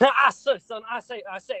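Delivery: loud, exaggerated, heavily laid-on Southern drawl. Told they've always been Foghorn Leghorn, doing a Foghorn Leghorn impression. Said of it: "I've always been Foghorn Leghorn".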